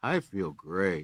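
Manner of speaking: glum, joyless, sad and sorrowful voice. Showing how tone can contradict words, the speaker says it in a sad voice. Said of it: "in a sad voice".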